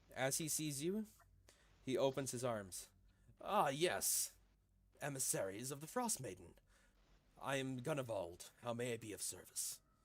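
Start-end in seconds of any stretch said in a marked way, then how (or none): 3.5-9.8 large, burly, muscular man's character voice. Voicing a large bear-pelted man greeting the emissaries: Gunnevald voice. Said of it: "a large, muscular gentleman dressed in the pelt of a bear".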